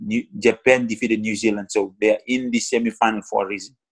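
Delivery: ordinary delivery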